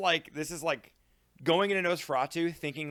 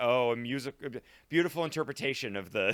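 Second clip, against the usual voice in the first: mock sarcastic flattering tone, lower pitch; 3 semitones lower than usual. Retelling a film character flattering the king: imitating sarcastic flattery. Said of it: "he's placating him and just being like".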